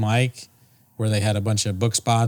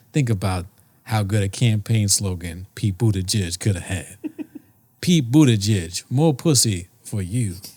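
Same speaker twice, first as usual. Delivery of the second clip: put-on New York accent. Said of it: "that New York accent".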